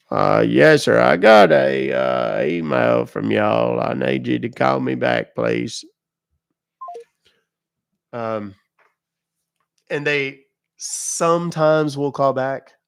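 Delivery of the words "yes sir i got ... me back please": fake loud, creaky, fumbling, confused old man voice. Leaving a voicemail for a scammer: pretending to be a confused old man. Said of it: "make them think I'm an old guy that doesn't understand".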